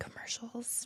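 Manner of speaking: hushed whisper. Asking the others about commercials they have seen: whispering. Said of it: "Why are you whispering to me?".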